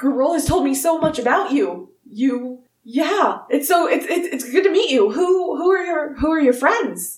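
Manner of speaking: excited character voice. The narrator voices Wulfric greeting the player's character: excited Wulfric greeting. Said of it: "vigorously and very excitedly shakes your hand".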